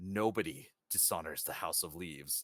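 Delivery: low, hushed half-whisper. A merchant's guard speaks into the listener's ear before shoving them overboard, half-whispering. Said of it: "whispers in your ear".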